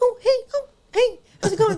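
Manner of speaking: put-on pleasant chatter. Retelling what was overheard through an earpiece in a bathroom: imitating really pleasant chatter. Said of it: "really pleasant, like".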